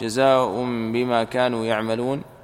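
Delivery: ordinary talk, nothing marked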